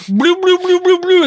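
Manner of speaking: mocking high-pitched babble. Insulting the flipper-finned creatures, a speaker does a mocking impression of them. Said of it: "That's my impression of you guys".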